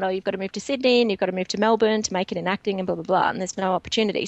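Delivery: ordinary talk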